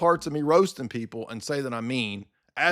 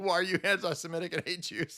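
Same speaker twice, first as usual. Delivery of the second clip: mock frantic, high, panicked freak-out; 5 semitones higher, 6 dB quieter than usual. Retelling how another man reacted in a debate: imitating someone freaking out. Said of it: "he just freaked out".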